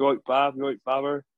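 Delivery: fake local Gloucestershire accent. Quoting how the lads around Fairford greet each other, put-on Gloucester accent. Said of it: "putting on a Gloucester accent".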